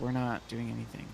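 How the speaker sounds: plain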